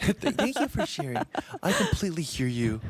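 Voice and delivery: high, sing-song chatbot helpdesk voice. Mocking how an AI replies when someone says they are sad, in a very AI-sounding tone. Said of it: "They reply in the very AI tone".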